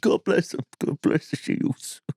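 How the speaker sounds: put-on old man voice. Voicing an imagined man next to the cenotaph: imitating a man by the cenotaph. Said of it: "He's going".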